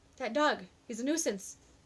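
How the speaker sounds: usual speaking voice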